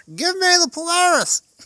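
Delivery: put-on old lady's very high, very loud yell. Retelling how an old lady stood on a chair, imitating her yelling. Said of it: "Yells it again".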